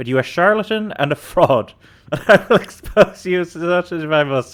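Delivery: laughing through the words. Reading a passage aloud, starting to laugh partway through. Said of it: "I just started laughing there".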